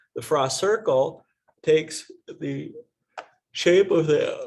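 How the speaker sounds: yawning through words. Teacher explaining the Frost circle to the class: yawning while talking. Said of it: "I'm yawning like crazy today".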